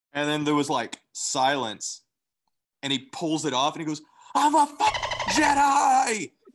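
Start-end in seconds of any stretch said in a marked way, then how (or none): 4.3-6.2 very high, very slow, drawn-out screaming yell. Retelling a guy who ran through the apartments, imitating him screaming. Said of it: "just screaming that over and over".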